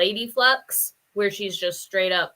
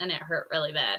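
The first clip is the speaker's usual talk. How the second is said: plain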